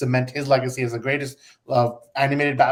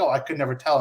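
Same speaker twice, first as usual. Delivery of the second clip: mock sarcastic tone, imitated. Retelling how the guest replied in a clip with two brothers, imitating someone being sarcastic. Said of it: "and he's sarcastic".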